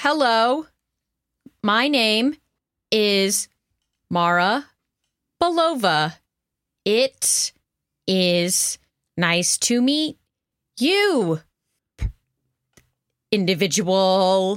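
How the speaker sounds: stilted, slow, halting robotic voice with breaks. Meeting envoys of the Minerva Project, Mara talking slower than normal. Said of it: "talking slower than normal".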